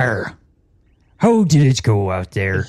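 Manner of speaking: pirate voice, nice and slow. Voicing Graf greeting the returning crew: pirate voice as Graf. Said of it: "I think it was pirate voice".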